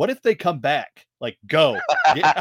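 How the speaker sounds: mock frightened, urgent tone. Retelling how his wife, frightened, urged them to leave: imitating wife's frightened urging. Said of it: "she was frightened".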